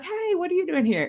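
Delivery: high, surprised tone.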